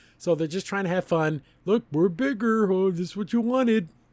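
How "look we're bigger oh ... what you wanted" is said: grown-big character voice, pitched up. Retelling a cartoon scene where characters grow bigger: imitating a character grown big. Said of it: "whenever a character gets bigger, they talk like this".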